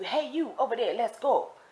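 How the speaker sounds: mock pushy screaming, called out high and urgent. Retelling how the staff at meals hurried everyone: imitating someone screaming. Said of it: "they're screaming at you".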